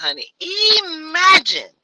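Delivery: very high, swooping, sing-song put-on voice. Urging listeners to imagine something, in the speaker's Dominic Morgan voice. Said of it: "Imagine in my Dominic Morgan voice".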